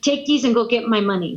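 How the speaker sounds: put-on thick Brazilian accent. Retelling what the coach said while handing over papers: imitating a thick Brazilian accent. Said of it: "he has a really thick Brazilian accent".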